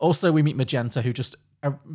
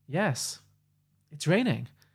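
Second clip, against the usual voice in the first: pointed pregnant pause, higher pitch, slower pace; 3 semitones higher, 3 dB quieter than usual. Retelling a loved film scene, quoting her reply with a pregnant pause. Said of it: "the way she says it with the pause".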